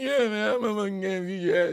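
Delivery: put-on drunk, belligerent macho voice. Telling about a drunk man who threatened him on stage: imitating the drunk guy. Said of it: "And he's like".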